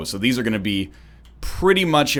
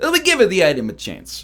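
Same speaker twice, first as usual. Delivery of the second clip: fake Italian accent, pitched up; 8 semitones higher than usual. A speaker recapping a run repeats his earlier line in a fake italian accent. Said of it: "I said it in like a fake Italian accent".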